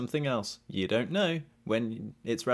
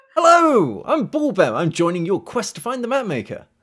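very high, very loud, keen gnome voice; 9 semitones higher, 12 dB louder than usual. Game master voicing Bulbem the gnome introducing himself to the party: Bulbem's gnome voice. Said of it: "And then he comes out and he's followed by this gnome that's sort of 5'8", 9", in his platform shoes".

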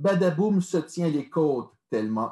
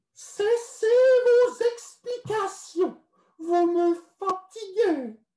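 disgusted, nose held shut, very high-pitched. Narrator voicing the princess cutting off a smelly visitor: pinched-nose disgusted voice. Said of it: "le nez bouché et l'air dégoûté".

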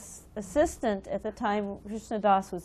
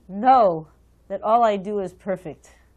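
mock grave, loud, booming, very stern voice; 8 dB louder than usual. Retelling the spiritual master's reply to his assistant: stern voice imitating Prabhupada. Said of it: "in a very stern voice".

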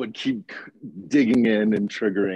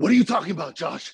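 high-pitched yelling; 7 semitones higher than usual. Speaker tells Sam how Sam yelled at him, mock yelling. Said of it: "You yelled at me".

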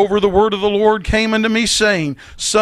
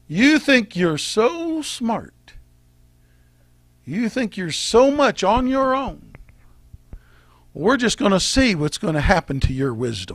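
sarcastic taunting tone, quieter; 5 dB quieter than usual. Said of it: "a little bit of sarcasm in this".

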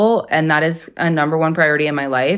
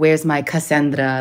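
put-on Guatemalan accent. Retelling what a drunk man would say to her, in a Guatemalan accent. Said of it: "he's got like this Guatemalan accent".

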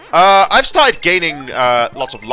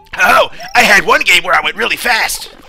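put-on cocky cartoon animal voice; 7 semitones higher, 4 dB louder than usual. Imagining Sonic answering Mario in a conversation: Sonic voice. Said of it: "And Sonic's there like".

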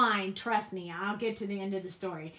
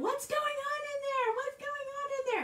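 mock very high, shrill, frantic alarmed cry; 3 dB quieter than usual. Retelling a squirrel in the bathroom, imitating mom screaming from the other side. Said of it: "my mom was screaming from the other side going".

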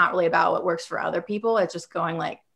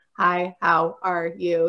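very slow, level, flat monotone. Describing recording lines to stay organic, showing a flat delivery. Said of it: "Like just flat".

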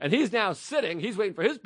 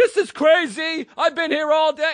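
high, raised scream; 9 semitones higher, 7 dB louder than usual. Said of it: "he starts screaming".

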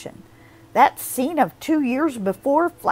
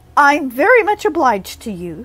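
arrogant, superior, haughty tone; 6 dB louder than usual. Anne speaks to Gilbert as she turns away from the boat, haughtily. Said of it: "she said haughtily".

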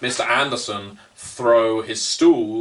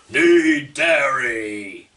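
stretched-out, mild yell with drawn-out dairy; 3 semitones higher than usual. Voicing a character who looks at a player and shouts: Mister Anderson shouting. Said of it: "he looks at you and shouts".

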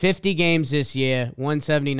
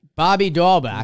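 put-on Boston accent, higher and louder; 4 semitones higher, 5 dB louder than usual. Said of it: "I'm not good with the Boston accent".

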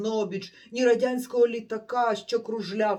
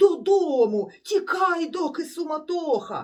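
high, loud, called-out shout; 6 semitones higher, 4 dB louder than usual. Narrator reads a stranger urging the hero to flee home: shouting. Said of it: "гукав той знову".

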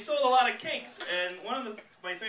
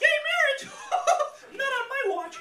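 very high-pitched cartoon mouse voice; 4 dB louder than usual. Mocking people who said terrible things, the speaker gives them a high-pitched Mickey Mouse voice. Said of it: "had a high pitched Mickey Mouse voice".

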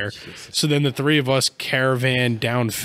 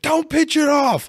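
play-acted very high, shrill yelling; 4 dB louder than usual. Retelling a phone call that keeps breaking up: retelling a yell into phone. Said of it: "I'm yelling into the".

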